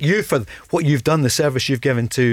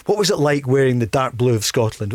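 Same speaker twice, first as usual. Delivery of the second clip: normal talking voice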